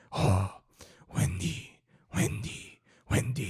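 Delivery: put-on slow, breathed-out delivery with a vague French accent. Imitating a character who sounds like a French guy: imitating Omar's French-sounding voice. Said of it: "he talks like this".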